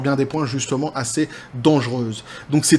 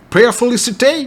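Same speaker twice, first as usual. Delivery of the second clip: loud, pitched-up, hard-hitting put-on American accent; 8 semitones higher, 6 dB louder than usual. Talking basketball, saying a city name in a George Eddy accent. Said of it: "je vous dis à la John Spartan, mais avec l'accent de George Eddy".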